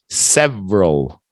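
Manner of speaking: "several" squeezed into two syllables. Teaching a learner how to pronounce a word, saying several in two syllables. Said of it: "2 syllables".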